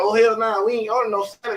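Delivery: acted, fed-up, indignant, high, furious outburst. Acting out a woman confronting staff over a restaurant tab: imitating a woman blowing up angrily. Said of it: "she just nut the fuck up".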